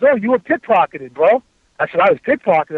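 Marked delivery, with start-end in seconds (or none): none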